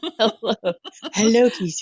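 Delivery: breathed out high and sultry. Greeting Keisha, in a breathy Marilyn Monroe voice. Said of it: "In my Marilyn Monroe kind of thing".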